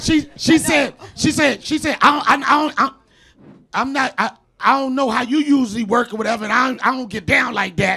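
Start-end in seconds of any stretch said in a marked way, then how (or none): 2.0-8.0 overdone, exaggerated street-slang voice. Retelling what she said on the phone: exaggerated imitation of her speech.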